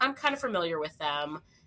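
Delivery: ordinary talk, nothing marked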